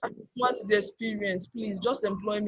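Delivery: mock imploring, begging, pleading tone. Retelling asking a manager for an unpaid job: imitating own begging. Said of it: "I was begging".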